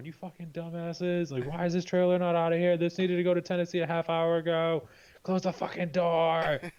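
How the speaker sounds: put-on yelling rant. Retelling how the facility boss came by yelling at everyone: imitating a boss yelling. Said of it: "just start yelling at everyone".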